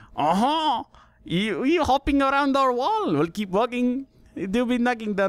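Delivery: horrible, high, cartoonish put-on French accent. Showing off a French accent bit, doing the French Peas voice from VeggieTales. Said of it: "I can do the French peas from from VeggieTales".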